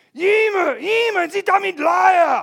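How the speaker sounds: drawn-out primal caveman yell, very loud and high. Chasing people with a bat, barefoot, speaker retells his shout: retelling a caveman yell. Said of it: "I'm yelling like a caveman".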